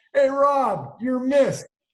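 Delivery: shrill, very loud, high, drawn-out yelling. Retelling someone calling from across the lot: imitating someone yelling. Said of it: "He yells out".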